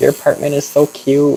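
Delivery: put-on high, childlike little baby voice. Retelling how a woman suddenly spoke in the apartment, imitating a little baby voice. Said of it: "like little baby voice".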